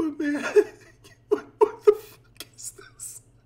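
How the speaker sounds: talking through laughter. Reacting to something hard to stop laughing at: laughing while talking. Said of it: "I shouldn't be laughing".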